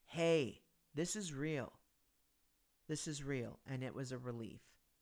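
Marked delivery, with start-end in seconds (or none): none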